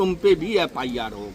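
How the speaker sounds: normal talking voice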